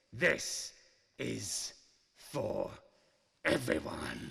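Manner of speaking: slow, low, drawn-out, menacing, word-by-word delivery.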